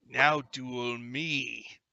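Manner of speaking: deep, heavy, low-pitched voice. Voicing a stranger who enters the bar and challenges them: deep voice. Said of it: "says in a deep voice".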